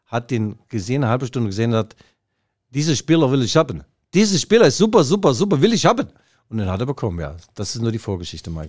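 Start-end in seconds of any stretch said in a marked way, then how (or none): 2.7-6.0 put-on high, loud, raised, pitched-up Polish accent. Retelling Pep Guardiola watching a player from the stands, with a Polish-sounding accent. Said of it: "polnischen Akzent gehabt".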